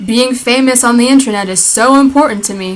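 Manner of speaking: ordinary talk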